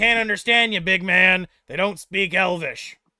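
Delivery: very loud, bellowing, shouting dwarf voice. In a game scene, the dwarf character yells out to the big man. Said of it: "the dwarf yells out".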